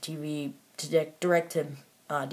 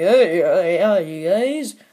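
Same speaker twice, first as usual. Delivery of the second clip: loud, weird, put-on cartoon voice. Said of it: "Captain Cold was like".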